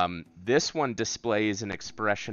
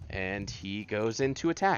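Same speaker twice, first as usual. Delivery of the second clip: ordinary talk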